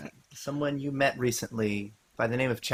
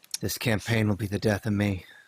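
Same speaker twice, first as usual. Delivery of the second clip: muttering under breath; 3 semitones lower than usual. A character obliges and leaves the tent, muttering under his breath. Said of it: "Under his breath".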